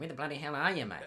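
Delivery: high Australian accent, advert slogan delivery. Joking about a game ripping off an ad: imitating the australian advert. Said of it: "ripping off the Australian advert".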